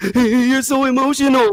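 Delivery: very high, near-crying, teary voice. Mocking another speaker's earlier remark, imitating someone sounding tearful. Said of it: "You sound like you crying when you said it".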